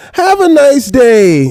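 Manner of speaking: very high, sissified, feminine voice. Mocking someone's sign-off from a replayed clip: mocking imitation, sounding feminine. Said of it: "That's his suburban side".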